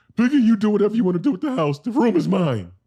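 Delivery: loud, high, belted bad frog puppet voice. Imagine him answering Miss Piggy in a fight over the house, bad Kermit the Frog impression. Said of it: "That's my Kermit the Frog impression".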